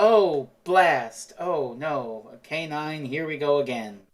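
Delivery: very slow, hammy, drawn-out, badly faked dramatics. Retelling how characters replay their lines in a time loop: bad fake acting. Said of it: "acting it out really badly and fakely".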